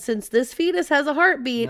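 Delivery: normal talking voice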